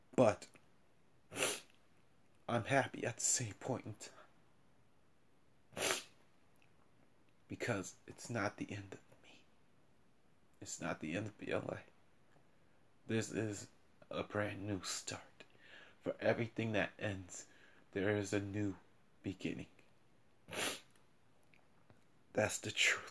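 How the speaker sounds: tearful. Podcaster speaking to listeners about keeping the podcast going, crying. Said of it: "I am crying".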